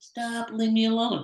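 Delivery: timid, half-hearted, weak, unconvincing voice. Showing how a line sounds that no one would take seriously: weak, unconvincing delivery. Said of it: "no one's gonna take me serious if I go".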